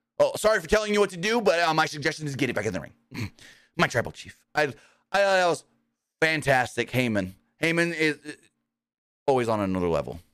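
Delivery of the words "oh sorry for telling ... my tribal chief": apologetic, then insistent wrestling-manager voice. Retelling the manager quickly apologizing to his wrestler: imitating apologetic Paul Heyman.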